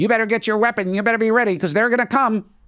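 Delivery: put-on sarcastic, scornful, mocking parody voice. Imitating people on the left who say to get a weapon: mocking imitation of the left. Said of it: "Same way I'm saying this".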